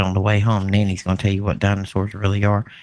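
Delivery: hushed whisper. Retelling what was said to a grandchild at school: retelling a whisper. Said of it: "I kinda whispered to him".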